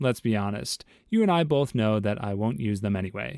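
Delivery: ordinary delivery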